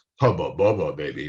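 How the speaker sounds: bottom-of-the-range low, dropped, flirty come-on voice. Demonstrating high versus low pitch, saying a line in a low tone of voice. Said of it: "we do our low tone of voice".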